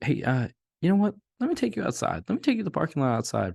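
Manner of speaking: very high, excited, swooping chatter. Retelling how Dave led him to the parking lot: imitating Dave's high excited voice. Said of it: "high, excited voice".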